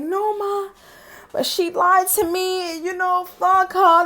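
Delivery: heated angry outburst, voice shooting way up high. Retelling a phone call with an aunt about a breakup: imitating own angry outburst. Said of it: "I was going off".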